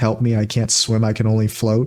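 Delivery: ordinary delivery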